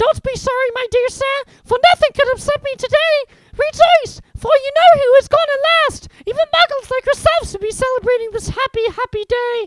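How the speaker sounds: shrill, very high, very loud squeaky voice. Narrator reads an old man's words to Mister Dursley in a squeaky voice. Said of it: "he said in a squeaky voice that made passersby stare".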